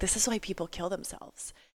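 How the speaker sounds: very quiet, breathy whisper. Retelling sitting in the waiting room, whispering over to her. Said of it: "and I just whispered over".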